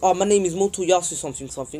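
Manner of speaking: ordinary talk, nothing marked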